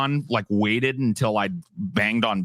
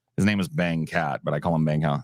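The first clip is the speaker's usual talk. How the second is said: ordinary talk, nothing marked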